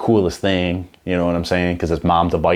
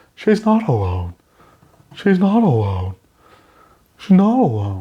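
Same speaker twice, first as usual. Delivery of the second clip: pitched-up, swooping offscreen voiceover delivery; 7 semitones higher than usual. Retelling a voiceover line from a Marvel movie: Scarlett Johansson voice. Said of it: "you just hear the Scarlett Johansson voice".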